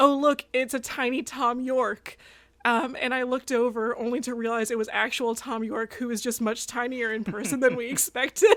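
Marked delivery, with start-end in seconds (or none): 0.0-2.2 big, booming, drawn-out call. Retelling what he called out while they walked through New York, retelling a booming voice. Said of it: "said in like a booming voice".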